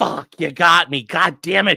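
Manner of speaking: put-on panicked, frustrated tone. Streamer acts out for chat what a caught man is thinking, imitating frustrated panic. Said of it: "He is he is getting frustrated, but he's also panicking".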